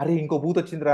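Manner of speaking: ordinary talk, nothing marked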